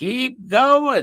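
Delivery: very high, shrill, screechy witch voice. Retelling a numbers game, the speaker imitates a woman's screechy, witchy voice. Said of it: "that screechy, witchy voice of hers".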